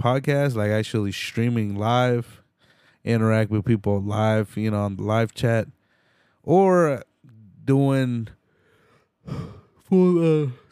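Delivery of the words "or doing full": words pushed out mid-yawn, pitched high. Late at night, host talks about podcast plans while yawning. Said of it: "Sorry for the yawning".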